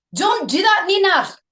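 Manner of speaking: put-on Scottish accent, loud and high. Discussing which accents they can do, the speaker shows off a Scottish accent. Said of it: "I can do Scottish".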